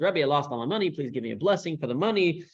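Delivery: mock crying, tearful, begging tone. Retelling a man begging the Alter Rebbe for a blessing, imitating someone crying. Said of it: "he starts crying in the office".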